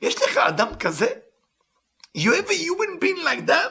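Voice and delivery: moved, full of feeling. Reading a passage aloud and translating it, emotional. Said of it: "I'm a bit emotional about this part".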